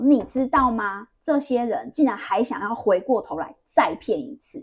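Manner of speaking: loud, slow, angry, indignant outburst. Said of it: "他就很生气".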